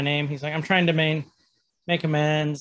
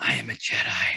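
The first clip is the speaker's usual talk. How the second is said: barely voiced whisper under the breath; 5 semitones lower than usual. Retelling how a character revealed himself, imitating a whisper. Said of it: "he starts whispering".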